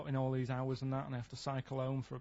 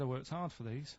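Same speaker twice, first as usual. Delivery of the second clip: usual speaking voice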